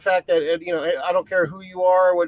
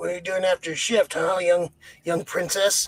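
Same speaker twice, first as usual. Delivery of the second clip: imitated creepy old man voice, put-on creepy tone; 3 dB quieter than usual. Acting out an older park guest approaching a cast member, imitating a creepy old man. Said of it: "want to be the creepy old man".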